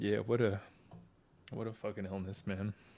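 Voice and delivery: choked-up voice catching with emotion. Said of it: "It's gonna be an emotional one".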